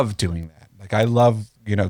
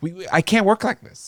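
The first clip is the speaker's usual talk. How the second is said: very high-pitched, flipped-out ranting outburst; 11 semitones higher than usual. Retelling a video where others say they must move: imitating David Lynch flipping out. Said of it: "he's flipping out".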